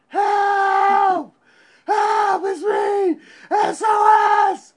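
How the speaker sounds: very loud, high-pitched, slow, drawn-out screaming. Retelling hanging a homemade flag out a window, retelling screaming. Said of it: "was screaming".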